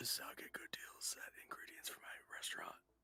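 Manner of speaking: soft, quiet, secretive whispered aside. Voicing a character who whispers to Grayson: whispering to Grayson. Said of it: "I whisper to Grayson".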